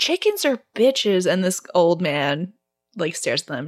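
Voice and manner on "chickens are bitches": high-pitched, acted-out yelling in a taunting tone. Retelling a film scene where a character yells: imitating Rachel yelling. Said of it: "I think she yells that".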